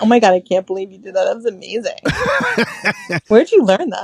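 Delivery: super patronizing, gushing fake praise laid on thick. Acting out how they'll praise him after his job, mock patronizing. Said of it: "I will be super patronizing about it".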